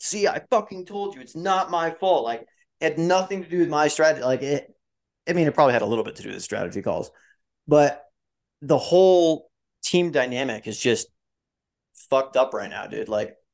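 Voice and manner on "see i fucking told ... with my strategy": play-acted half-hearted shout, mild and unforceful. Imitating Mattia after the race, screaming to the heavens: imitating Mattia screaming. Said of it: "screaming to the heavens".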